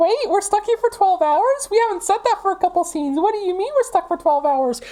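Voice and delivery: shrill, squeaky puppet-like voice. Playing a winged character in a roleplay scene, in an Elmo voice. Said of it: "Why do you actually sound like Paimon's V A?".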